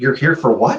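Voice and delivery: flustered, hesitant, nervous and uncertain. Retelling how a temp receptionist questioned him: imitating someone speaking nervously. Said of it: "she very nervously said".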